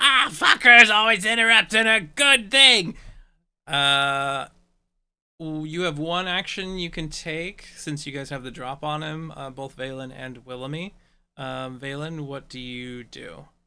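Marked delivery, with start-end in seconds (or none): 0.0-3.0 very loud, hissing imp creature voice. Game master voicing the imp as it gets hit, in a hissing imp voice. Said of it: "it like hisses at you and goes".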